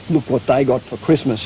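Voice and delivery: ordinary talk, nothing marked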